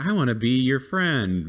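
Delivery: mock shy, eager-to-please, high timid little voice. Imitating a timid cheetah character from the show: imitating a timid character. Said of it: "he's just kinda timid".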